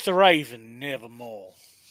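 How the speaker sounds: put-on Southern accent. Saying a Poe line after being told to try it: Southern accent. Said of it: "you should do it on a, a Southern accent".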